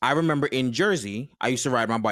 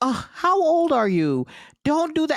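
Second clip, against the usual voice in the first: mock condescending tone, higher; 4 dB louder than usual. Retelling how a judge spoke in court: imitating a judge talking down to a child. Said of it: "she's talking to me like I'm a freaking child".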